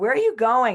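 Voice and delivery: loud, high screaming. Retelling a friend calling out as they jumped from the van: imitating a friend screaming. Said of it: "my friend screaming at me".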